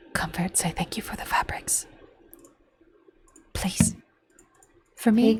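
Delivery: urgent, very soft, barely voiced whisper. Playing a character who turns to another to speak privately, in a quick whisper. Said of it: "Adira quickly whispering to Comfort".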